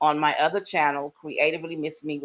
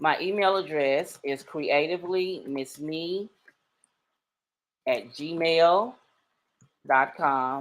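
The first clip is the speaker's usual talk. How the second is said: unhurried, slow, deliberate, word-by-word delivery. Giving listeners her email address, she is talking slowly. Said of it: "I'm talking slow because last time".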